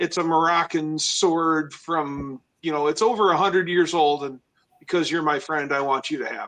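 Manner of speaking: ordinary delivery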